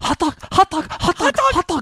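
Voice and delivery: imitated really worked-up, agitated delivery. Imitating another speaker discussing concern for hot dog: imitating someone really worked up. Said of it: "And you're really worked up there".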